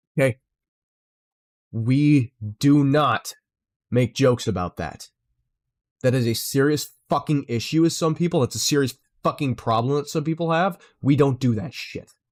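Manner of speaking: seething, livid, dead-serious furious voice. Reacting to a joke about a serious issue, speaker is furious. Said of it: "I am fucking livid right now".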